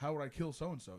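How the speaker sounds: ordinary delivery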